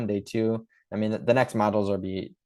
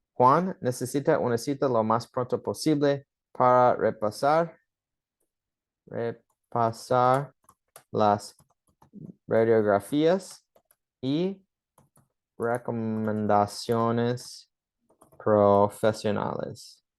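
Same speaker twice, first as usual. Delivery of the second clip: slow, halting, careful, deliberate word-by-word pacing. Reading a practice sentence aloud for learners, speaking slower. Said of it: "So I will speak slower".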